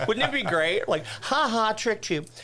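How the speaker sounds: high, gleeful, playful teasing tone. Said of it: "And I was like".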